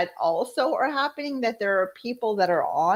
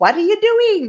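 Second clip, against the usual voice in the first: put-on annoyed heated outburst, higher and louder; 7 semitones higher, 8 dB louder than usual. Retelling own reaction to drivers breaking road rules, imitating own heated irritation. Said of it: "I start to get a little bit on the hot side".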